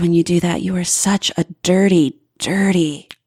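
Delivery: dropped voice. Giving an example of teasing dirty talk when asked: lowered voice. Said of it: "her voice dropped".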